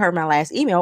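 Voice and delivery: ordinary talk, nothing marked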